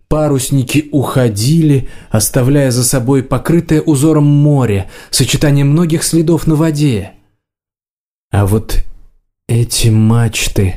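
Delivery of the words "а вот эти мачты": slow, drawn-out mumble. A monitor lizard watches sailing ships leave, muttering. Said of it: "пробормотал варан".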